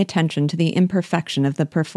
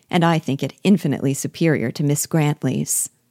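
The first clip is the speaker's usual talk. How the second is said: usual speaking voice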